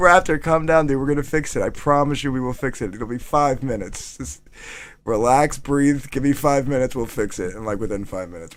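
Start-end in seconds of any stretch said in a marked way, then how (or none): none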